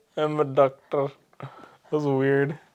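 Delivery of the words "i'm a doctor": slight put-on Indian accent. Repeating their earlier line after the other speaker remarks on it, Indian accent kind of. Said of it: "I said it with an Indian accent kind of".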